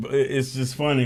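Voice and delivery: words broken up by laughter throughout. Apologizing for laughing before showing images, laughing while talking. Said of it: "I'm sorry for laughing".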